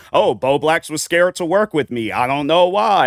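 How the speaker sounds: weird, mocking put-on voice. Retelling what another creator once said, imitating his weird way of talking. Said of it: "a weird way of talking".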